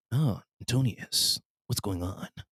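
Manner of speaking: slow, breathy, near-whispered put-on character voice. Trying an impersonation while greeting Antonius, Solid Snake impression. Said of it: "let me see if I could do my, uh, snake impersonation".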